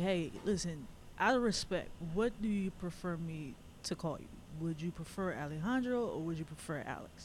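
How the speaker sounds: ordinary delivery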